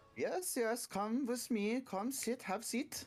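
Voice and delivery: put-on very high-pitched, thick German accent. Speaker in a role-play inviting the others to come and sit: german accent. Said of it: "That's a German accent".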